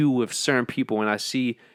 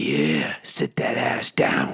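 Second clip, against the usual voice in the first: put-on taunting, mocking demon voice, lower; 8 semitones lower than usual. Retelling what an inner demon keeps saying: imitating a taunting inner demon. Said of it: "my demon is like".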